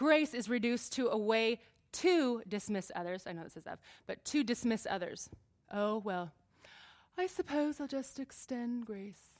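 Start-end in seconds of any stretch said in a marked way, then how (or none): 5.7-9.2 lofty, superior, haughty, hoity-toity condescending tone. Acting out someone who dismisses others by extending grace: mock-haughty tone. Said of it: "it might not look as hoity-toity as that".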